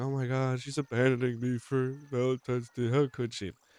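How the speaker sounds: tongue-in-cheek joking tone, high and loud. Joking that his wife is leaving him alone on Valentine's Day: said jokingly. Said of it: "jokingly, I'm just saying".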